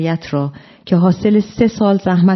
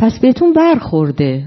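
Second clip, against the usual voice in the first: chuckling under breath, much higher pitch; 4 semitones higher than usual. Replying to the man who drew a caricature of him, chuckling under his breath. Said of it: "فوشتوانگر زیر لب خندید و گفت".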